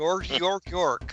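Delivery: put-on mock Swedish accent, puppet character voice. Giving a pep talk in a favorite character voice: Swedish Chef voice. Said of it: "Swedish Chef".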